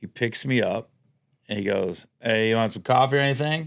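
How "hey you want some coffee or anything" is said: put-on thick Boston accent, faster. Retelling Casey offering coffee after picking the speaker up, Casey's thick Boston accent. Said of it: "he's got that thick Boston accent".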